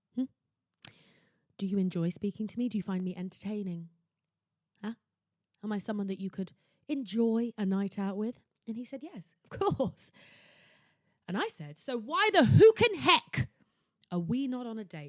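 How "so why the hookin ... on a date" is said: very loud, slow, swooping scream. Giving dating advice by retelling a talk with a man, screaming. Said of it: "Sorry for screaming at you".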